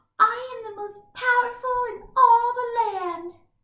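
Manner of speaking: tiny, squeaky, very high mouse voice. Showing how to match each story character's voice, speaking as the mouse. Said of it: "the mouse might talk like this".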